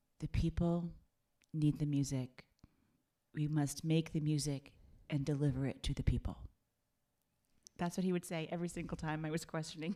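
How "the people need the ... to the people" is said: low, grave, solemn, very serious declaration. Retelling a friend's stock answer whenever he was questioned: retelling a very serious remark. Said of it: "he would say in a very serious voice".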